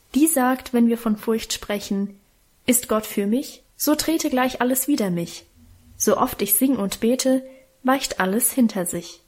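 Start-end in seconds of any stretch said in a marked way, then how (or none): none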